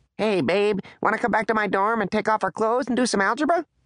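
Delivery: squeaky, very high, weird cartoon chipmunk voice. Reading Taylor's line spoken into a phone that makes her voice odd: high-pitched chipmunk voice. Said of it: "her words came out high-pitched and weird, like one of the chipmunks".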